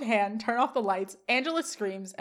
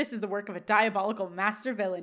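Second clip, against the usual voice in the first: ordinary talk, nothing marked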